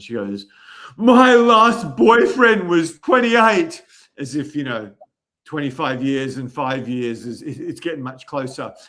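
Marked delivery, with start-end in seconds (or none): 1.0-3.8 emphatic, heartfelt, passionate, raised and drawn out. Retelling what a young woman said about her last boyfriend: imitating a passionate tone. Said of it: "with such passion in her voice".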